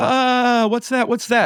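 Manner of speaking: playful, joking, very high-pitched put-on yell. Retelling pulling up in a car toward a woman standing still, retelling a joking yell. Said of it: "I start jokingly uh, yelling".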